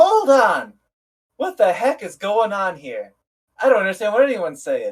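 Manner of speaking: shrill, swooping shriek, pitch all over the place. Retelling how Min stood up while the captain talked, imitating Min's shrill shriek. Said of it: "Min stands up in like a shrill, shrieking voice".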